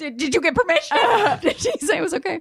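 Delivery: pitched very high. Retelling how mom reacted when told the news: imitating my mom. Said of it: "She's like".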